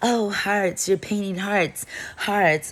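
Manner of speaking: mock high yelling, rambling on and on. Retelling what someone behind them yelled during painting: imitating someone yelling. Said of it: "she's just yelling".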